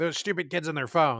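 usual speaking voice

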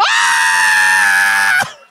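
loud crowd screaming together. Playing the audience in a talk-show bit: screaming audience. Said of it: "and then you scream".

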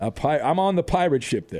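normal talking voice

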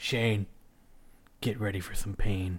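very quiet, low, barely audible voice. Retelling what Xbox answers after Triple H speaks, retelling a very quiet line. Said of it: "Xbox says very quietly".

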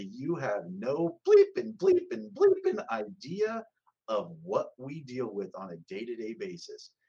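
acted, loud, swooping furious outburst. Retelling a mother answering the older lady: imitating an angry outburst. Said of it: "just let her have it".

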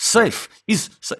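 put-on very high voice with thick Russian accent. Retelling a film scene where a character bursts into a house: Vasily's thick Russian accent. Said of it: "in his thickly accented sort of English with a Russian accent".

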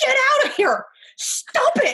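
put-on shrill, very high, loud yelling. Recounting a video, retelling a man's yelling. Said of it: "the things he's yelling".

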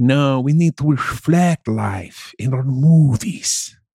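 thick put-on French accent on English. Speaker mimics the french in a chat about movies: mock french accent. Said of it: "Is that a French accent?".

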